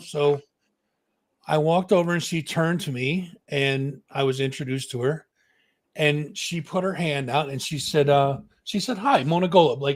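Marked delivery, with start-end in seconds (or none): 9.0-9.8 put-on matter-of-fact voice. Retelling being introduced at the Eddies: imitating Mona Golub, matter of fact. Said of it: "very matter of fact".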